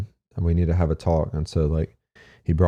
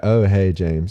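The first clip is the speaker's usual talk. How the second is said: mock heavy, shame-laden, condemning, disappointed tone; 2 semitones higher, 3 dB louder than usual. Recalling how people greeted him, mimicking their tone: imitating a disappointed greeting. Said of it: "you could hear the condemnation in their voice".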